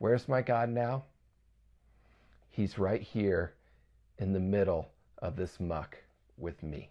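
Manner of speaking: acted quiet, confident tone. Retelling what someone said while cleaning, acting out a quiet, confident reply. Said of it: "says quietly and confidently with his head bowed".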